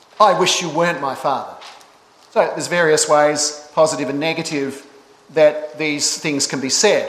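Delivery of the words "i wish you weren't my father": angry, rebellious, lashing-out outburst. Speaker demonstrates a line to a father said in an angry way, mock-angry. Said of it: "used in an angry way".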